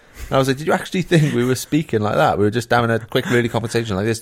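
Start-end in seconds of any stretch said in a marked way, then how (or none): 2.4-4.2 extremely rushed, rattled-off speech. Showing how quick a conversation really was: very fast talking. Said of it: "That's a really good impression of going too fast".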